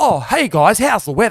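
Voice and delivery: on-air radio host announcer delivery. Podcast host contrasting podcasts with radio, radio voice. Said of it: "I'm not using some radio voice where I'm saying".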